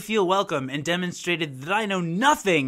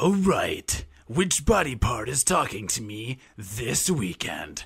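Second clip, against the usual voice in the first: very low, deep, big manly voice; 7 semitones lower, 3 dB quieter than usual. Reading out a conversation Chris posted: deep manly voice as Chris. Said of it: "Chris's voice will be portrayed by a deep, manly voice".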